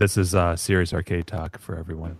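radio announcer voice. A co-host announcing the show's name, in NPR voice. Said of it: "almost like an NPR voice you had".

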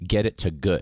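ordinary talk, nothing marked

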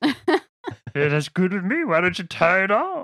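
slow, lumbering big ox voice.

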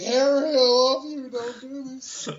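very high, earnest, pleading tone. Joking about a film's emotional scene: Ben Affleck impression. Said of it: "do a Ben Affleck".

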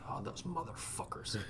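hushed, breathy muttered curse, near whisper. Recalling Dad watching clips of past battles, retelling a mutter under his breath. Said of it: "under his breath".

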